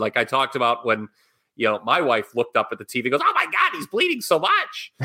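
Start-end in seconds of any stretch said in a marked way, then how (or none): 3.3-4.9 very high-pitched mock female voice. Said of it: "she doesn't sound like that".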